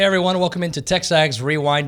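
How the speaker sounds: raspy, worn-out, hoarse voice, pitched high. Opening the show after a weekend of yelling, hoarse lost voice. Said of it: "I lost my voice".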